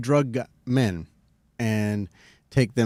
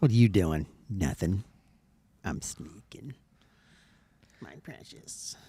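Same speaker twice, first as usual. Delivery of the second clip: put-on creepy sneaking whisper, creature-like voice; 3 semitones lower, 6 dB quieter than usual. Joking about sneaking through tunnels, creepy put-on voice. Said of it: "That was creepy".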